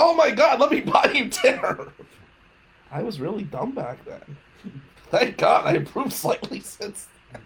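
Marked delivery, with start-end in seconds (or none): 0.0-1.9 high, loud, overeager, gushing delight. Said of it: "I was like".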